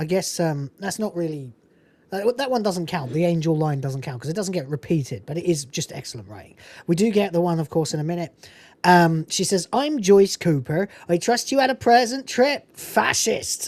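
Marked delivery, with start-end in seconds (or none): 9.7-13.7 put-on rural English accent, higher pitch. Quoting Joyce Cooper greeting a newcomer from a movie: Joyce Cooper's accent. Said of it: "everyone has that accent, by the way".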